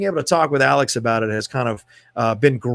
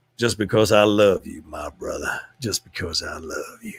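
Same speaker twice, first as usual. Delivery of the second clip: very low voice with a mild Western accent; 7 semitones lower, 4 dB quieter than usual. Thanking Cameron for donating over twenty dollars, in a little Western accent. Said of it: "You get my little Western accent when I do that".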